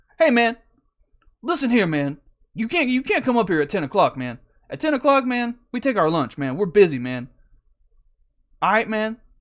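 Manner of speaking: put-on loud, high, irritated angry voice. Retelling what a dude on a forklift said on arrival: imitating an angry dude. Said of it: "I can tell he's angry immediately".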